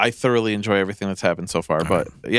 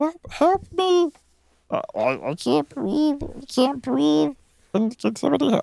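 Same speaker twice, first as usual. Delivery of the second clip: put-on very high, slow, halting, choking cry. Retelling how a man at a birthday party choked on cake: imitating someone choking. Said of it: "it got stuck in his throat".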